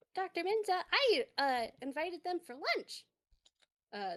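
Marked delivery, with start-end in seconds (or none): 0.2-3.1 high, piping cartoon mouse voice. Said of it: "the mouse toon pipes up".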